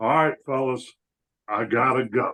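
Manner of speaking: put-on, sloppy, slurred drunken voice. Acting out someone leaving the bar: Chad voice, drunk and slurred. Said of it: "I'm gonna do an impression of Chad leaving the bar".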